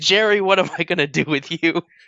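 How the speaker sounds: very loud, high-pitched yell at full volume. Speaker voices Reed yelling at Gary; Reed yelling. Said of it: "he just yells".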